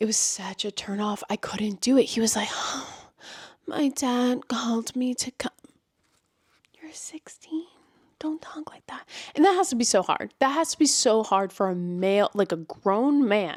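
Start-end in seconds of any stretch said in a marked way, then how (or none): 2.5-5.5 mock bedroom-breathy voice, quieter, slower. Mocking a male narrator voicing a sixteen-year-old, imitating bedroom-breathy narration. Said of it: "so bedroom breathy".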